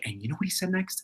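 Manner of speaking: pointed, focused, angry half-whisper. Retelling how Seth talks when he is mad: imitating Seth's mad half-whisper. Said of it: "He'll sort of whisper to me if he's mad".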